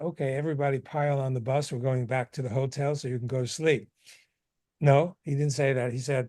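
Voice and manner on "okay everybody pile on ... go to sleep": ordinary talk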